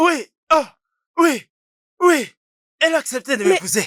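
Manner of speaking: very high, elated, joyful shouting. Just after his marriage proposal is accepted, celebrating out loud: joyful shouting. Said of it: "pourquoi tu cries?".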